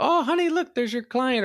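put-on terrible British accent. Quoting a meme line in a terrible British accent. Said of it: "that was a terrible British accent".

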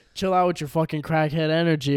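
ordinary talk

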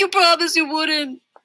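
put-on high, whiny, complaining voice like a kid. Narrator reading Daniel's reply after Elaine threatens to slug him: whining. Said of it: "Daniel whined".

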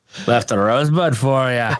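bad, clumsy Scottish accent. Co-hosts comparing movie characters, one quoting a line as a bad Fat Bastard impression. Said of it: "apologize to the Scottish people for our horrible reenactment".

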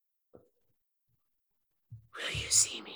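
soft, ghostly, disembodied whisper. Playing a disembodied voice speaking to strangers entering its home: quiet disembodied voice. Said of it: "a disembodied voice talking to me quietly".

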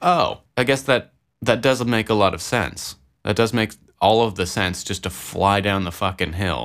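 ordinary delivery

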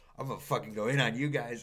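ordinary delivery

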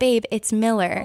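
ordinary talk, nothing marked

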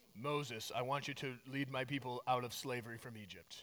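very low, hushed, heavenly-sounding voice. Telling the burning-bush story, doing God's voice as in the movies. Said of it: "that's what God sounds like in the movies".

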